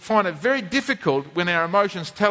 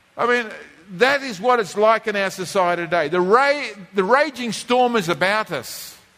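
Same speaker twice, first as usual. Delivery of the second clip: ordinary talk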